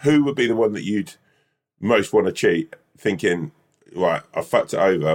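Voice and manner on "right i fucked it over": usual speaking voice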